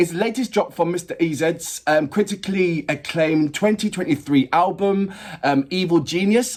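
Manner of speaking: ordinary talk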